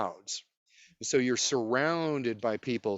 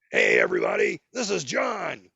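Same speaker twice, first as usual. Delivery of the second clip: rough, raspy put-on voice with big pitch swoops; 7 dB louder than usual. Retelling what a figure said to a crowd: George Carlin voice. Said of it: "the George Carlin voice".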